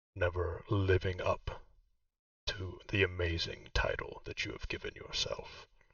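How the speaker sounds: deep character voice. A cloak approaches and speaks to you, in a deep voice. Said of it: "the cloak says in the same deep voice".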